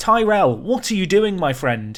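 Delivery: angry, fed-up voice. Reacting to a player leaving for a rival team: angry. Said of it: "I'm so angry".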